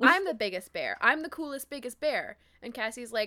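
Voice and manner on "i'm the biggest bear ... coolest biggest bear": loud put-on indignant, stung, offended outburst. Retelling a book scene where Rachel defends grizzlies: imitating an offended Rachel. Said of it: "Rachel gets really offended".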